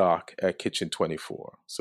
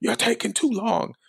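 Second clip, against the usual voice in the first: yelling up high as a cop. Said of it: "they were yelling".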